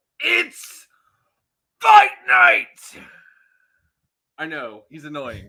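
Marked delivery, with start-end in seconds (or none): 0.2-3.0 very loud, high-pitched, belted announcer shout. Opening the show, imitating Michael Cole: Michael Cole announcer voice. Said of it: "I wish I could say it like, uh, Michael Cole".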